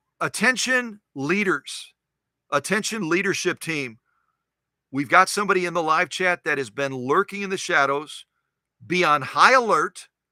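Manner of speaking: ordinary talk, nothing marked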